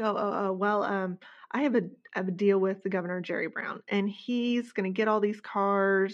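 ordinary talk

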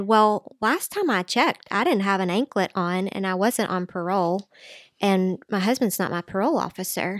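usual speaking voice

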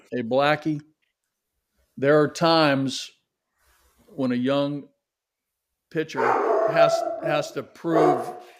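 faint Missouri drawl on the words. Retelling what a man from Missouri said, looking him in the eye: slight southern drawl. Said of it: "had a little bit of a southern drawl".

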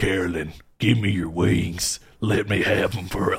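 strange put-on game voice, low and muttered. Retelling how a character sneaking around in vents talks, in a Sling Blade-like voice. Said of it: "he's just going and sneaking around".

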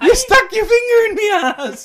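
very high, very loud, shrill shrieking yell. Retelling what one of the boys yelled while walking upstairs, retelling a yell. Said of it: "he yells out".

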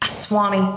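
put-on frustrated voice. Retelling how a mom exclaims when she stubs her toe: imitating a frustrated mom. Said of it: "If she was really frustrated, it would just be like".

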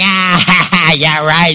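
mock scoffing laughter, acted disbelief. Retelling how Sarah did not laugh: imitating a disbelieving laugh. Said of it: "I don't think she was laughing like".

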